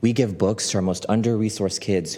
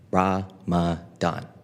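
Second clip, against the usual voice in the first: put-on child voice, slowly sounding out a word; 2 semitones lower than usual. Retelling a kindergartner reading a book title: imitating a child sounding out a word. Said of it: "Kareem sounding out the book title".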